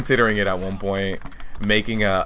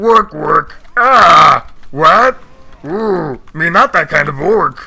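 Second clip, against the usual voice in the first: very loud, pitched-up put-on creature voice; 8 semitones higher, 11 dB louder than usual. Recalling how the peons in a game quest sounded, peon creature voice. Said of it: "the peons sounded a little something like this".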